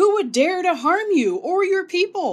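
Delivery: very loud, very high, booming, outraged thundering king voice. Narrator voicing the outraged king answering a plea to save her people, thundering in outrage. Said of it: "he thundered".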